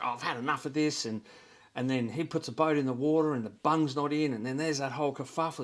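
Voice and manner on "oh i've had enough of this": put-on yelling. Retelling a stressed wife at the boat ramp: imitating a wife yelling back. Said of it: "the wife's yelling back at them".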